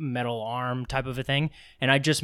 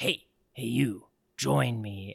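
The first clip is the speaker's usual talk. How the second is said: weird, strange, otherworldly villain voice. Speaker retells what his wife heard someone say to their kid: weird Kylo Ren voice. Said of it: "she heard this like weird voice".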